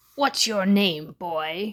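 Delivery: loud, gruff growling voice. The committee chairman addresses a boy before him, growled. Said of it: "growled the chairman of the committee".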